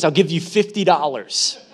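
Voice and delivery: normal talking voice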